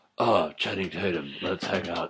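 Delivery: low, mocking, dead-serious self-serious delivery. Mocking a dramatic film role: mocking Steve Carell in Foxcatcher. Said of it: "fake nose of going".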